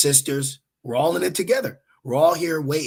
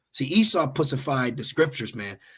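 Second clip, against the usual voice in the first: plain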